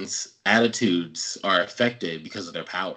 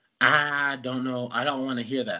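put-on Southern country accent with raised pitch; 5 semitones higher than usual. Retelling a scene from the story, doing Rogue's country accent. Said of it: "I can't do the country accent like that".

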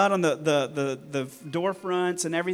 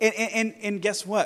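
normal talking voice

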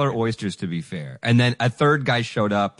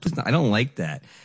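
usual speaking voice

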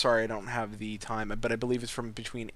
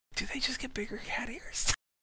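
whispered, breathy, hushed; 12 semitones higher, 6 dB quieter than usual. Talking to viewers on a stream, whispering. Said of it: "I'm whispering".

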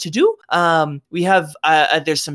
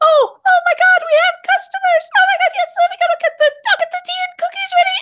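put-on tiny small girl voice, much higher pitch; 4 dB louder than usual. Storyteller voicing a tiny halfling girl character; tiny halfling girl voice. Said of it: "and she says".

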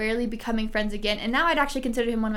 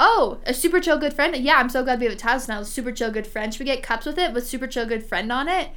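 plain

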